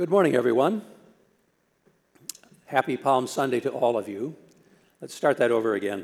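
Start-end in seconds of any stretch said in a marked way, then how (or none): 0.0-4.4 voice all crackly. Greeting everyone on palm sunday morning, with a crackly voice. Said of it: "My voice is all crackly".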